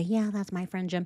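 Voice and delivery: worn-down, beaten, defeated and resigned tone. Pointing out how the other person answered: imitating a defeated tone. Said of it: "She sounds so defeated when she has to say".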